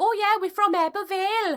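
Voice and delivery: exaggerated, thick valleys Welsh accent, pitched very high. Recalling meeting a family with thick accents, copying them: exaggerated Welsh accent. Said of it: "why am I so Welsh right now?".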